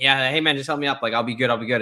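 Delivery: ordinary delivery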